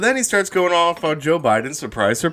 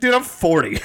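usual speaking voice

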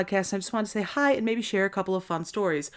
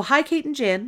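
real Wisconsin vowels slipping out, pitched up; 6 semitones higher than usual. Reading the greeting of a listener's letter aloud: Wisconsin accent slipping out. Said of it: "it was real Wisconsin there for a second".

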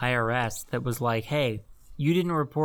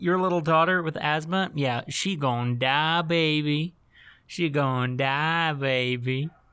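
put-on Southern accent. Retelling what the man in the office said about the NDA, Russell Crowe's Southern accent. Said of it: "With that good old Southern charm".

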